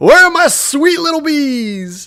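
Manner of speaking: booming, very high shout, "bees" stretched. Game narrator voicing the player's dad shouting as he opens the door, booming voice. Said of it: "in a booming voice".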